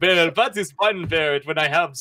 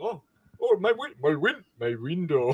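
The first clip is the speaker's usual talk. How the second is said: slow, drawn-out put-on vampire voice; 4 dB quieter than usual. Voicing the shopkeep as the party slips out: vampire voice. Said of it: "you keep doing your vampire".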